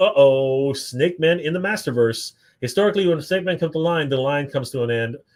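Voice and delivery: ordinary talk, nothing marked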